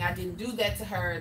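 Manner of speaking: ordinary talk, nothing marked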